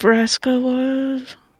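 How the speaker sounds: whisper meant to be overheard. A player asks another character a question so he can hear, stage whisper. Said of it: "you're stage whispering so he can hear you".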